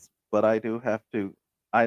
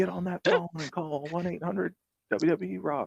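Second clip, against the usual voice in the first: very high-pitched put-on salesman hawking voice; 9 semitones higher than usual. Retelling how a wrestling show host sold T-shirts: imitating Doc Hendricks' voice. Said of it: "wow, that voice".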